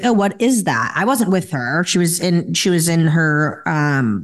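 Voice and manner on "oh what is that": ordinary talk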